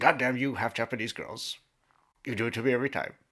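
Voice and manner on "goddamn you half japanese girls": raised, loud, belted-out character voice. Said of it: "here's an impression of John Blackthorne".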